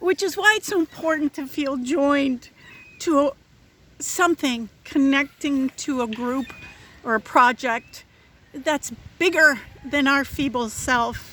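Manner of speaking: emotional, choked-up voice catching mid-phrase, halting. Giving a talk to an audience, getting emotional. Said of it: "I'm getting emotional".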